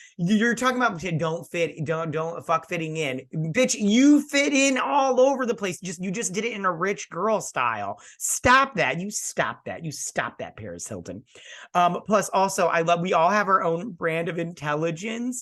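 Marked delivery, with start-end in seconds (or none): 0.2-11.2 irritated, annoyed, scolding tone with swooping pitch. Responding to what Ty said about fitting in, annoyed. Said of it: "I'm getting annoyed now".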